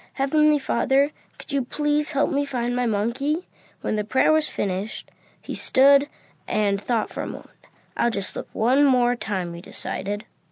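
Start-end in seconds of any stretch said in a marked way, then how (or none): 0.2-3.5 pleading, begging, imploring tone. A boy kneels on the ground to pray, pleading. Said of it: "He knelt on the ground and pleaded".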